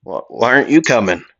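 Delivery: ordinary delivery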